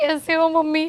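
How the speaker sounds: tearful, weepy crying voice. In a skit, a daughter greets her mother on a call, crying. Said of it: "तू ऐसे रोते रोते क्यों आ रही है".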